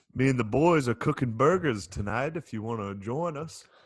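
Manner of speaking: put-on Southern American accent. Improvising as a neighbor down south, in a southern accent. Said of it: "make a southern accent".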